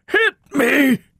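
very high voice, cracking. A narrator voices a panting thin man challenging another, cracked voice. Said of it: "said in a cracked voice".

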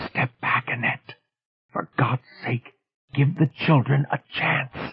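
theatrical whisper meant to carry. Narrator reads Hoskins speaking to Annette beside the children: stage whisper. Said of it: "In a stage whisper".

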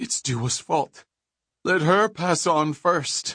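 breathless, panted. Narrating Trit, who feels it wasn't fair, as he speaks panting. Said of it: "Trit panted".

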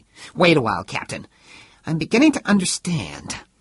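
fierce, sharp cutting-in tone. Cutting in after the captain defends himself: fierce interruption. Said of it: "Zamo interrupted fiercely".

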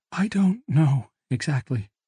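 whispering. A father answers his daughter, who has asked what happened: whispered. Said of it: "he whispered".

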